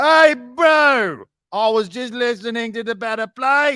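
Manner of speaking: put-on high, slow yell, "bro" stretched out. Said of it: "why are you yelling at him?".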